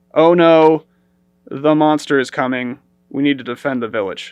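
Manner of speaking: wooden, passionless delivery. Mocking the movie's voice actors, the speaker does a mock flat line reading. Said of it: "it didn't feel very passionate of a performance".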